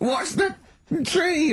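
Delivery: put-on high scream.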